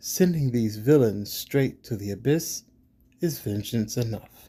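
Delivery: ordinary delivery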